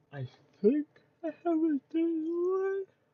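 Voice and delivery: words pushed out through a yawn, very high, loud. Talking through what they are doing, apologising for yawning, yawning while talking. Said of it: "I'm sorry, I keep yawning".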